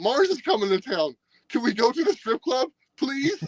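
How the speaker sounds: very high, swooping, gushing, eager enthusiastic pleading. Retelling what she asked, imitating her very enthusiastic request. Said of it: "very enthusiastic".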